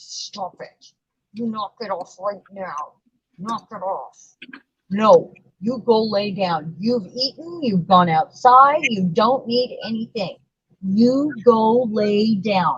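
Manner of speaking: speaking through gritted, clenched teeth. Telling the dog to lie down, talking through teeth. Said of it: "talking through my teeth to the dog".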